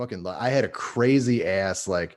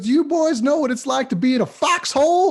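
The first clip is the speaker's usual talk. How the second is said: shrill, very high-pitched, loud voice; 8 dB louder than usual. Quoting what he said to the boys, imitating a high-pitched voice. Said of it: "he had a real high pitched voice".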